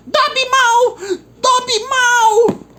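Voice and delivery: loud, high-pitched squeal. Narrator reading the elf's outburst as he bangs his head, squealing as Dobby.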